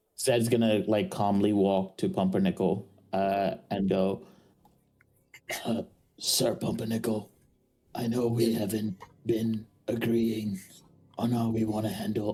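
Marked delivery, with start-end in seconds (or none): 6.2-12.4 very quiet, hushed, discreet, confidential murmur. Speaking in character so the king cannot hear: speaking very quietly. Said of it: "saying this very quietly for not the king to hear".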